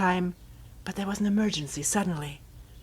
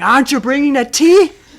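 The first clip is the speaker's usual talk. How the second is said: full-volume, loud, high-pitched shout; 6 semitones higher, 15 dB louder than usual. Speaker acts out calling again when there's no answer, acting out a shout. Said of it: "Now I'm shouting".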